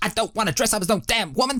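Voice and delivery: very high, indignant, angry ranting voice. Talking about dressing up, performing a refusal line angrily. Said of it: "I'm gonna go for like that kind of like angry".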